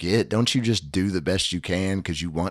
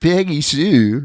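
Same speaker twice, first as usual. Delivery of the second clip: put-on high nasal voice, higher and louder; 8 semitones higher, 10 dB louder than usual. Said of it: "can you do an impression".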